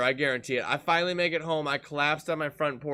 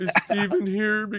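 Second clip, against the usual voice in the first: mock tearful crying girl voice, higher and louder; 6 semitones higher, 4 dB louder than usual. Retelling a late-night visit, imitating Gabby crying her eyes out. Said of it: "crying her fucking eyes out".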